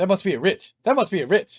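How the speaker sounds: very loud, shouty, booming, high-pitched comic voice. Joking about Ritz crackers on air: Eddie Murphy impression. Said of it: "that's my Eddie Murphy impression".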